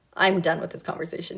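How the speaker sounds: ordinary delivery, nothing marked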